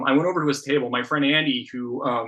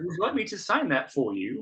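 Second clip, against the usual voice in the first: bad, wobbly, soft put-on English accent, swooping pitch; 4 semitones higher, 5 dB quieter than usual. Retelling meeting a comic artist at a signing: imitating Dave McKean's accent. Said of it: "I apologize for butchering his accent".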